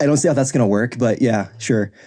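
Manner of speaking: ordinary talk, nothing marked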